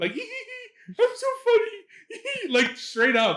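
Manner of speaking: very high, loud, giddy laughing.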